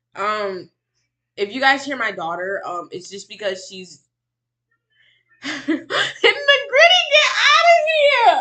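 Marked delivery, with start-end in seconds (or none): 5.5-8.5 high, loud shriek with laughter. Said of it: "I'm screaming".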